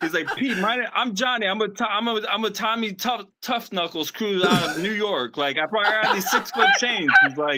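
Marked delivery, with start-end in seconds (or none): 0.4-7.1 confident taking-charge boss voice. Retelling how someone poses as the boss at a job site: imitating Johnny Hamchek acting the boss. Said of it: "he'll just start acting like he's the boss".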